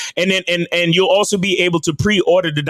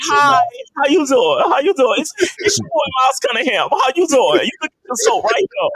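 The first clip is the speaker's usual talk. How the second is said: high, slow, swooping talk-show host voice; 9 semitones higher than usual. Doing a Wendy Williams impression for the panel: Wendy Williams voice. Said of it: "that was a little too convincing for my taste".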